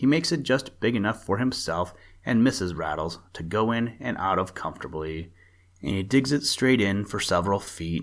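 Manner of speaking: usual speaking voice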